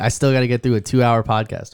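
plain

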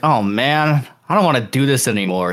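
ordinary delivery

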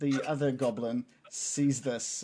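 ordinary talk, nothing marked

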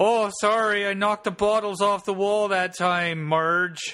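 put-on Minnesota accent, pitched very high. In a comedy bit about the Bunyip scream, speaking in a mock Minnesotan accent. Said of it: "sounds like a Minnesotan".

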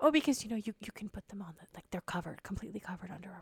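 whispered. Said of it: "whispered to me".

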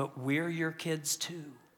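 soft, quiet, low-key delivery. Retelling a daughter's words as her mother gets in the car, said quietly. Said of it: "the daughter just kind of says quietly".

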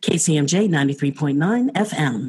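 low, on-air radio announcer voice. Giving the call sign of the friday radio show, in a radio voice. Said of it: "Radio Voice".

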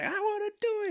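mock very high, weepy five-year-old crying whine. Retelling being five and left out at a giveaway: imitating own past crying. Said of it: "I was crying 'cause I was like".

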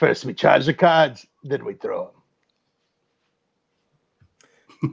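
put-on gravelly character voice. After the broadcast intros, the speaker delivers a quote in a gravelly Gambit voice. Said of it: "has that gravelly voice".

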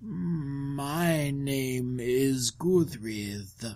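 eerie, hushed, spooky ghostly voice, drawn-out "my". Introducing a character to a listener, in a spooky voice. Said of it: "So that's your spooky voice?".

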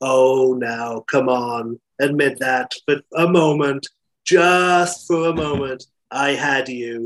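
drawled, in an American accent.

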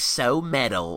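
exaggerated camp, theatrical voice. Recounting how James speaks to the camera at the end: James's camp voice. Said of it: "in a camp voice, like so metal, like that".

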